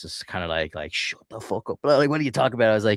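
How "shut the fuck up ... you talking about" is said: mock heated, worked-up, half-drunk, high-pitched voice. Retelling a retort to a heckler at a game: imitating own going-mad outburst. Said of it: "I was going mad".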